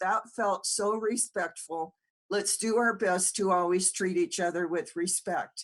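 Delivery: plain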